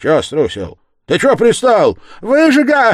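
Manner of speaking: very high, loud, rising, swooping shout. A woman turns on a man taunting the yard-keeper: shouted. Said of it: "крикнула баба".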